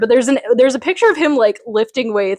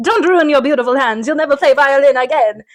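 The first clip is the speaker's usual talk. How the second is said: put-on Italian grandfather voice; 4 semitones higher than usual. Retelling a scene where Mickey slips into an Italian grandpa voice. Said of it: "Davy's Italian, grandpa".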